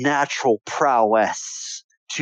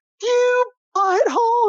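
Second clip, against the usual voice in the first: put-on very high little girl voice, about five. Voicing an upset girl in the game after slime smeared her hair: voicing a five-year-old girl. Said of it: "a girl about five to six years old".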